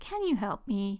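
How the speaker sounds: begging, pleading little-brother voice. A younger brother asks his older brother for help, in a pleading little-brother voice. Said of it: "with his little brother pleading voice".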